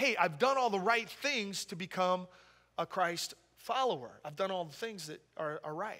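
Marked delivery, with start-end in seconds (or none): none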